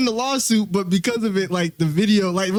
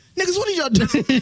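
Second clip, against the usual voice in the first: angry, high-pitched, demanding tone; 7 semitones higher than usual. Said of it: "that high-pitched whisper voice don't get around when he get mad".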